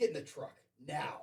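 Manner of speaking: loud, stern, no-nonsense dad voice. A father retelling ordering his child to leave the park: retelling his dad voice. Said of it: "so what's your dad voice?".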